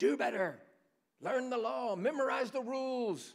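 acted-out yell. Preaching on a Bible passage, acting out Jesus's cry: acting out a shout. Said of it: "What does he shout?".

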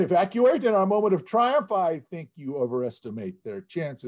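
normal talking voice

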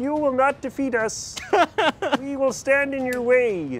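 high-pitched cartoon frog puppet voice. Planning a game scene, voicing a villain who appears on a gargoyle, Kermit the Frog voice. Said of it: "He comes out and he's like".

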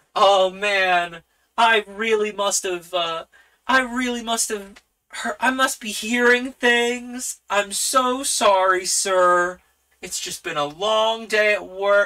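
hammy fake acting. Voicing a character covering a slip with a bad acting job: bad fake acting. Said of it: "puts on a very bad acting job of".

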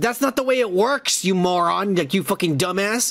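mock livid, furious cursing tirade. Retelling a movie scene where the character goes crazy: imitating furious Mister Paradox. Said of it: "and he's super pissed".

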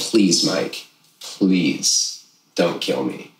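put-on earnest, pleading, begging tone. Retelling how he begged a man not to kill him: retelling his own begging. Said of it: "I'm begging him".

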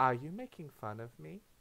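put-on eerie, echoing, creepy child-doll voice. Voicing the creepy doll child heard from every direction, echoey creepy doll child voice. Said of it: "the echoey voice of the creepy doll child".

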